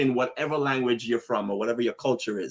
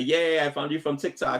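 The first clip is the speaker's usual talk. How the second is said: ordinary delivery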